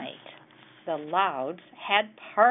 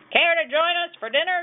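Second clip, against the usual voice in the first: very shrill, high, fast, loud shout; 10 semitones higher, 5 dB louder than usual. Reading a story aloud, voicing the father calling to the quiet neighbor: shouting. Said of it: "shouted Pa Loud".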